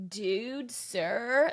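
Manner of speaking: surfer-style voice. Retelling a book scene where a student answers his teacher, Seth as surfer dude. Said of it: "like a surfer".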